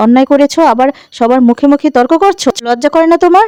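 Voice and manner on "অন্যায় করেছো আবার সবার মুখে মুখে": ordinary delivery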